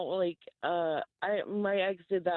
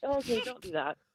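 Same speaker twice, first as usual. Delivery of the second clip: plain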